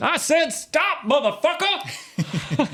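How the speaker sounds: very high, shrill, wildly swooping angry yell. Imitating a favourite actor's voice: Samuel L. Jackson impression, shouting. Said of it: "Something like that".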